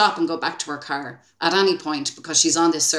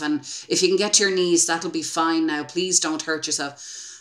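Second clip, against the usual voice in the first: normal talking voice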